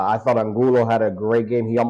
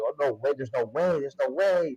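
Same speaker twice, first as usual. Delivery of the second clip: mock thrilled, excited, disbelieving reaction; 3 semitones higher, 7 dB quieter than usual. Retelling watching a shot take an angle toward goal: retelling own excited reaction. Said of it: "I'm getting all excited already".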